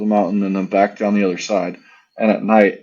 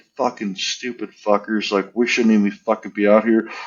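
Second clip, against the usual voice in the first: put-on angry voice. Retelling gathering the team's gear after a blast: imitating own angry words. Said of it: "I'm angry".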